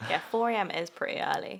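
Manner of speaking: plain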